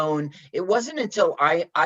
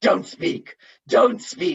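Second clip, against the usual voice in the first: mock overly dramatic woman's delivery, higher; 5 semitones higher than usual. Quoting a half-remembered movie line, imitating an overly dramatic woman. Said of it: "overly dramatic woman".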